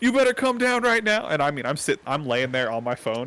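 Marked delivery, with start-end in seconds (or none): 0.0-1.3 put-on scream, higher and louder. Retelling how a chief yelled up at a hidden person: imitating someone screaming. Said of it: "he just starts screaming like".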